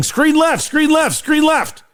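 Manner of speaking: very high, repeated yelling, acted out. Explaining a basketball play to a teammate, acting out the defender: imitating someone yelling. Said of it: "as soon as my guy starts yelling".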